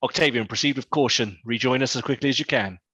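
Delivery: voice echoing as if inside a helmet. Player voicing her character over the vox with her helmet on, echoey helmet voice. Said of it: "from her standard voice to a rather echoey".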